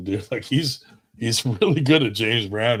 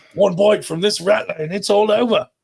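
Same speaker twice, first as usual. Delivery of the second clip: very high, loud, put-on Australian accent; 10 semitones higher, 5 dB louder than usual. Show the person you are talking to how they sound to you, in a mock Australian accent. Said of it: "that's how I sound to you".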